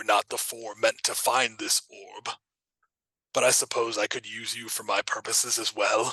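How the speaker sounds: deep voice echoing as if in a chamber. A game master voices the orb speaking to all four players, deep echoing orb voice. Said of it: "You hear a deep voice echo in the chamber".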